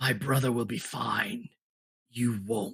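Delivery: voice of a frozen ice monster. Game master voices the ice creature threatening a player's character: ice creature voice. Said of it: "A voice from the ice creature goes".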